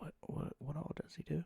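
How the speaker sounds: barely audible, hushed, breathy whisper. Asking a bandmate something in character while the other listens: whisper. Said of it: "I'm gonna whisper to Keys".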